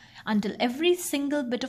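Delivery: ordinary delivery, nothing marked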